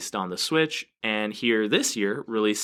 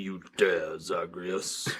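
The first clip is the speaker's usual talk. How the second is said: deepest possible voice, kept soft and held back; 3 semitones lower, 5 dB quieter than usual. Playing Hades as an evil Santa, addressing Zagreus, in the deepest voice ever. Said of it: "With like the deepest voice ever".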